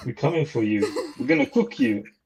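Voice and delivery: put-on Jamaican accent. Asking about a boxer while quoting his line: Chris Eubank impression. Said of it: "that Jamaican boxer guy who goes".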